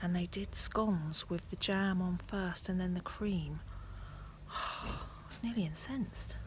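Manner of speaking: hushed whisper. Vlogging by a church after lunch at a cousin's, whispering. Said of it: "I don't know why I'm whispering".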